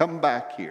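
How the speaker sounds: normal talking voice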